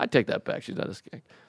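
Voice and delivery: hushed whisper.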